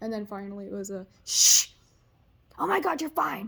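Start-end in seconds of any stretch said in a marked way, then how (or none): 1.3-3.5 put-on, very loud, rough, furious angry shush. Retelling her mom comforting her while she cried: imitating mom's angry shushing. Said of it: "my mom is very, very angrily comforting me".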